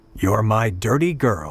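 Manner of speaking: low, gravelly, growled delivery. Reading a story aloud, voicing a character's line: gravelly voice. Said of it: "he said in his gravelly voice".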